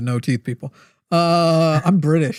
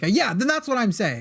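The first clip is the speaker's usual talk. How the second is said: hurried, rushed, cornered-sounding delivery; 4 semitones higher, 5 dB quieter than usual. Retelling how JJ conceded a point, imitating JJ's quick, loud reply. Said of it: "She said it like very quickly and loudly".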